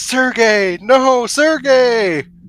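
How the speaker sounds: very high, very loud, shrill, piercing scream. Narrating the tale as she is pulled away and Sergey fades: screaming. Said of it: "she screams".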